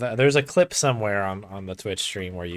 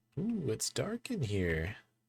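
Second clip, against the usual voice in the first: put-on animated character voice with pitch swooping all over; 4 semitones higher, 9 dB quieter than usual. Playing a game and commenting on a dark area: Cedric's voice. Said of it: "he said in Cedric's voice".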